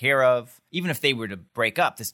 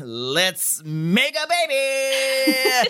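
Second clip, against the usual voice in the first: put-on very high announcer voice, "baby" stretched out; 14 semitones higher than usual. Co-host shows how Christopher did not say it, in a game show host voice. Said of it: "He didn't say it like a game show host".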